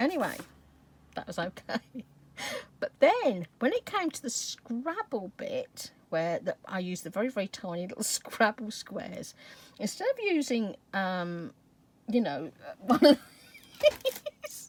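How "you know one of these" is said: high-pitched, giggling and laughing through the words. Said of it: "I'm laughing my head off".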